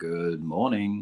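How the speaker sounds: deep, low, slow, soft, calm voice. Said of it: "He's got that real deep voice".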